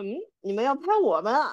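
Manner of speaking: mock anxious, nervous delivery, words hurried. Retelling how someone nervously asked about being filmed: imitating a nervous question. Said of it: "很紧张".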